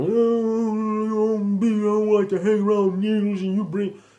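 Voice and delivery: mock very high snapping rant, drawn-out "oh". Retelling how a father went on a rant, imitating someone snapping. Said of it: "just snapping".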